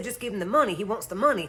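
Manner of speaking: usual speaking voice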